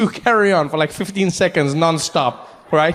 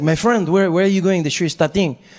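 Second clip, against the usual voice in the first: voice of a French man. Retelling what the French man next to him asked: imitating the French man. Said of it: "the French guy turns to me and he's like".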